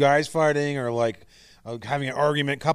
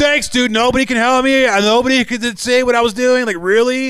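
mock shrill, furious, very loud, high yell; 10 semitones higher, 10 dB louder than usual. Retelling what was said after choking in public: retelling own angry yell. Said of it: "you collectively yelled at everyone else".

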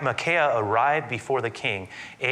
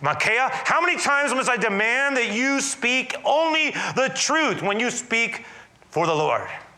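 mock sharp, demanding, very high scolding tone; 11 semitones higher than usual. Retelling the king demanding the truth, acting out a sharp rebuke. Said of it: "the king speaks up sharply".

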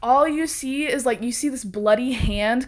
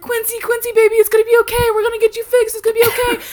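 mock, very high, loud, tearful, frantic crying; 12 semitones higher, 6 dB louder than usual. Retelling how an officer ran to her cousin, imitating her crying. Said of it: "runs at him and she's crying".

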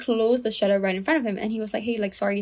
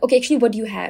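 loud, rude, curt delivery; 6 dB louder than usual. Retelling how a woman spoke to a man in front of everyone, mock-rude. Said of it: "so rudely".

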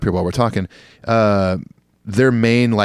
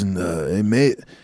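put-on Scottish accent, much slower. Describing a Scottish guitar tech he toured with, the speaker is imitating a Scottish accent. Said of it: "talked like this".

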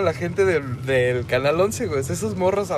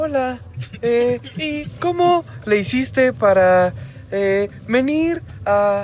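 put-on high, slow, drawn-out kids'-show radio tone; 5 semitones higher than usual. Describing a kids' program heard on public radio and how they talk: imitating kids on a radio show. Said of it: "Con este tono".

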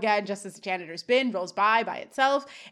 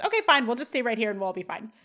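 ordinary talk, nothing marked

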